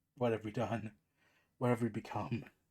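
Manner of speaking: low, soft, dazed voice.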